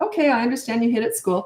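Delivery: easygoing light lilt, calm and even, nothing sharp. Showing parents the tone to use with a child who hit at school, light lilt, no anger. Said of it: "A little bit of a lilt in my voice".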